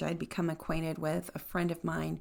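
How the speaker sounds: ordinary talk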